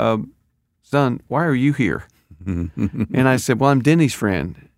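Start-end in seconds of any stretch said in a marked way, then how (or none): 0.0-2.0 put-on sweet, gentle, slow little-old-lady voice. Recalling a sunday at church, the speaker quotes a little old lady greeting him: imitating a sweet old lady. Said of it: "in a really sweet way".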